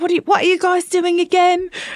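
high, terrible, mock British accent. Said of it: "heard you go Australian to English".

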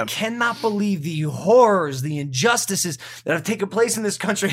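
grandly overdone, dramatic, theatrical delivery. Reacting to a series on the Central Park 5 just finished, dramatic. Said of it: "I'm being dramatic right now and I sound dramatic".

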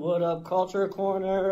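ordinary talk

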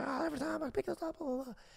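put-on very high, raspy, nagging, scolding yell. Retelling a mom's complaint about clothes in the laundry chute: imitating mom yelling. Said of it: "yelling at me for not putting my clothes".

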